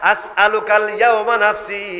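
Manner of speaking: ordinary talk, nothing marked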